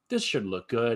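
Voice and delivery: ordinary talk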